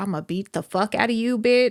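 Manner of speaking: mock-angry, acted-out angry voice. Retelling what was in their mind back then, retelling own mad threat. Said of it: "I was mad".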